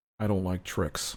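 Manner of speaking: muttered and grumbled under breath. A character slams his quarterstaff on the ground with a grumble, muttered under his breath. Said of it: "under his breath".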